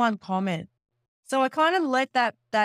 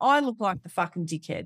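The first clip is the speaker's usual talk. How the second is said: ordinary talk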